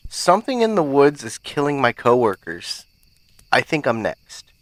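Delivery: ordinary delivery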